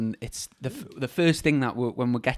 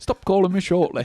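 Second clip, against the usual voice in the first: attempted Yorkshire accent, much higher pitch; 6 semitones higher, 3 dB louder than usual. Retelling what Piggy always replies when told 'see you shortly', in a Yorkshire accent. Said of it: "Was that a Yorkshire accent you're trying to do".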